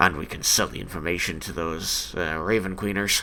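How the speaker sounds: whispering aside. Voicing a character who leans over to a player: whispering at your elbow. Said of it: "whispering at your elbow".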